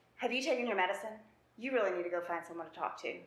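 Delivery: put-on sarcastic tone. Retelling what he says when the speaker is being dramatic, imitating his sarcasm. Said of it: "so that sarcasm".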